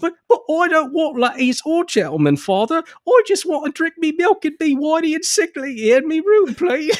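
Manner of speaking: storybook prince voice, very high. Describing a novel character, acting him out as the Terry Jones Prince from Monty Python. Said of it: "basically the Terry Jones Prince from Monty Python and the Holy Grail".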